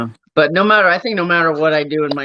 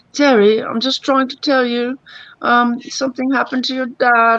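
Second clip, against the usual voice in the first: pleasant, polite put-on British accent, pitched up; 9 semitones higher than usual. Retelling a call from your mom's friend about your dad, imitating a pleasant british accent. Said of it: "talking all pleasant with his pleasant accent".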